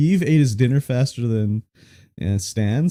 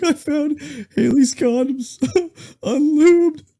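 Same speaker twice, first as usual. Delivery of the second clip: mock crying, higher pitch. Retelling a scene from American Dad: imitating Francine crying.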